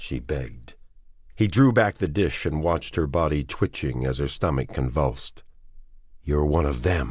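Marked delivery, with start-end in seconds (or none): 6.2-7.1 soft, quiet, venomous. A man speaks to a woman pressed against the wall; quietly venomous. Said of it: "quietly venomous".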